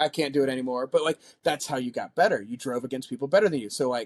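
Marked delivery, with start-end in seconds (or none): none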